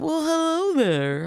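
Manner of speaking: play-acted sunny, cheerful voice, pitched way up. Retelling a character answering the door in his robe: imitating a happy greeting. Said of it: "all happy in his robe".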